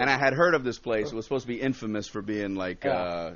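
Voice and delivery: ordinary talk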